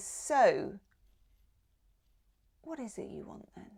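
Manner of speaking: kind, tender, gentle soft voice. Voicing the quiet voice once the layers are peeled back: gentle soft voice. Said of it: "this gentle, lovely, soft voice says".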